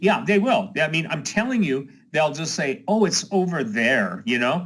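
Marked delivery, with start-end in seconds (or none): 2.9-4.2 breezy, careless, dismissive and sarcastic. Imitating how most people would react, sarcastic imitation. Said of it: "I'm sorry to sound so, uh, sarcastic".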